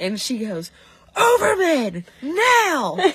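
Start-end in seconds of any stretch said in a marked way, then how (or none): 1.2-3.0 very high, very loud, shrill angry voice. Retelling how she called Overman in: imitating an angry order. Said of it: "but she sounds angry".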